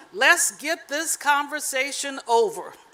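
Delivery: ordinary talk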